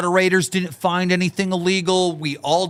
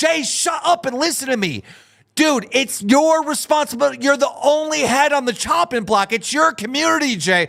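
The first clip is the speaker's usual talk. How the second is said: mock furious, exasperated shouting and screaming; 7 semitones higher than usual. Retelling telling off a community owner who wouldn't listen: re-enacted screaming. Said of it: "I'm screaming at Jay".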